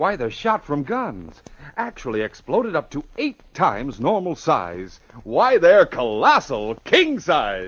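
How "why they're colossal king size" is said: higher, louder, overeager excited pitch. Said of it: "take it easy".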